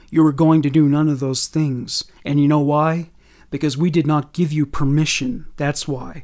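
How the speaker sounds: ordinary delivery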